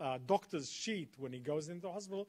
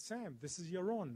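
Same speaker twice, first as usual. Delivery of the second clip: plain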